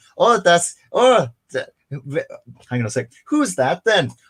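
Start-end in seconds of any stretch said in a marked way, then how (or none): 3.3-4.1 slight Irish accent. Trying out a voice for a German disco figure: a bit Irish-sounding accent. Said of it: "that sounded a bit Irish".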